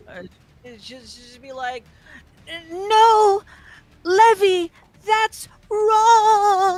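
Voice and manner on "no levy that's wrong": put-on English siren voice. Doing an impression of the English-voiced siren's lines. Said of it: "my best impression of, of English siren".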